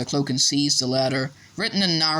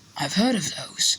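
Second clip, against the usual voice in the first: soft, hushed, under-the-breath speech; 4 semitones higher than usual. Narrator reads a character reacting to an unwrapped gift, hushed voice. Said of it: "he said in a hushed voice".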